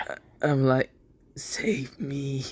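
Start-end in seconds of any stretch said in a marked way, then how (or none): 1.4-2.4 soft whispering voice. Speaking in character, asking another character to save them: whispered. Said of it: "I kinda whispered to Dante".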